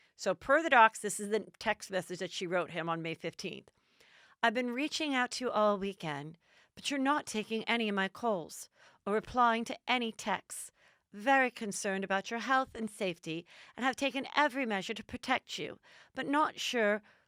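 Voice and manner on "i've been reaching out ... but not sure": put-on, slight English accent. Reading her text to her father in Meghan's voice, slight English accent. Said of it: "this is Megan's voice, but with a slight English accent".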